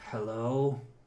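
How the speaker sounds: raspy, smoky heavy-smoker woman's voice. Voicing a woman answering the payphone: raspy female voice, like heavy smoke. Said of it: "there's a female voice, kind of raspy".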